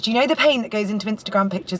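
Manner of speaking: ordinary talk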